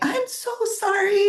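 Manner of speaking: mock, very high, yelled-out screaming. As the mother coming out for her dog, retelling a screamed apology.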